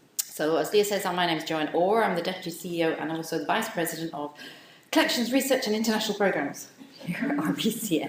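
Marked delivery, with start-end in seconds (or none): 2.1-8.1 rushed straight through, fast, rattled-off delivery. Giving a long job title while welcoming the audience: said really fast. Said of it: "I say it really fast".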